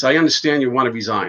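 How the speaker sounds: ordinary delivery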